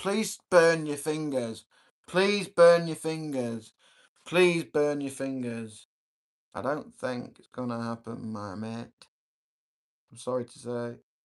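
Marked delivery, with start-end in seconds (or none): 0.0-5.9 very loud, high, shrill yelling from afar. Retelling what someone out there is shouting: imitating someone screaming. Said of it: "There's someone out there screaming".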